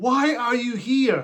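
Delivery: mock very slow, high, fed-up, baffled pleading voice. Reviewing a film, retelling a shout at the screen during the movie. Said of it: "I keep shouting at the screen".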